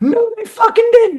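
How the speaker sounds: mock very high, thrilled, excited yelling. Recalling yelling while his wife tried to watch: retelling an excited yell. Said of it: "I was yelling as if I was like".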